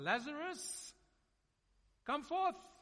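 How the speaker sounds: loud, high, full-voiced, commanding shout. Retelling the Bible story, Jesus calls Lazarus from the tomb with a loud shout. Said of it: "with a loud voice, he shouts out".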